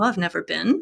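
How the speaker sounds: usual speaking voice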